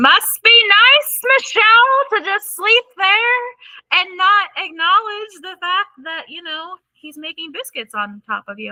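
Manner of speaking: very high, shrill, screaming rant. Speaker retells her friend yelling at her for sleeping on the couch; imitating a friend screaming. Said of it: "my friend was like screaming".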